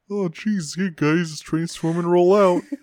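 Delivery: high-pitched cartoon sidekick character voice. Trying the Optimus voice again, which sounds like Patrick Star. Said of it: "You sound like Patrick Star".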